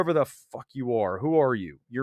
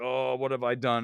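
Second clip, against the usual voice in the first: put-on regretful dismay, lower and quieter; 4 semitones lower, 6 dB quieter than usual. Retelling his mom's reaction to a violent movie: imitating mom's dismay. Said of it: "And my mom's like".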